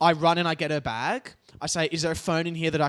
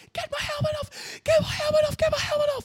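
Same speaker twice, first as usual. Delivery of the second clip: mock screaming, much higher. Speaker retells what a woman said when they ran over to her, imitating her screaming. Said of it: "She is screaming".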